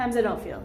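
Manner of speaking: words slurred together, rushed and sloppy. Drilling the unimportant middle words of a phrase: fast and sloppy. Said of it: "read the middle parts, the unimportant words, really fast and really sloppy".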